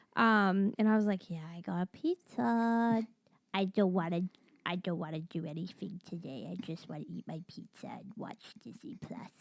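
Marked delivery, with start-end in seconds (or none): 1.3-9.3 deliberately irritating, put-on, low, quiet voice. Retelling talking to the cooks while getting pizza, in a really annoying voice. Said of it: "kept talking like in a really annoying voice".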